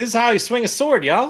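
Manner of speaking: very high, folksy put-on country accent. Voicing a character after being asked for a farmer's country accent: country accent. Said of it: "put on, like, a country accent?".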